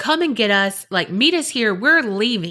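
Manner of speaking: plain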